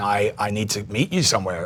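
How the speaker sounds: put-on crying voice. Retelling calling a mother in tears: retelling a tearful call. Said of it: "calling my mum in tears".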